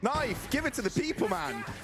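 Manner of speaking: high, excited, pleading cheer.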